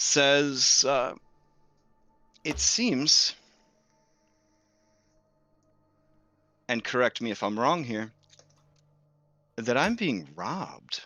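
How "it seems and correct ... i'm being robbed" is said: clear, ringing voice that carries far. Voicing a woman leading two creatures, confronting robbers: very clear, carrying voice. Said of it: "in a very clear voice that carries easily to all of you".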